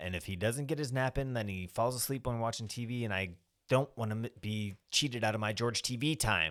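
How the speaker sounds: clipped, short delivery. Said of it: "She's being very curt".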